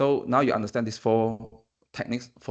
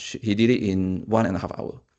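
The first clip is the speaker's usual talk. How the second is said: normal talking voice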